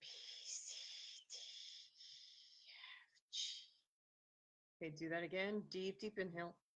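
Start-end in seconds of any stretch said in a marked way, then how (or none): 0.0-3.4 very slow, soft whisper, letters with breath pushed out. Instructor demonstrating a whispering exercise for the listener: whispering letters. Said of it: "whispering A".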